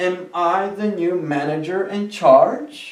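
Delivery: pitch climbs upward on "charge", like a question. English lesson on questions: pitch rising at end on charge. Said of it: "En las tres ocasiones el tono de la voz sube, ya concluyendo la pregunta".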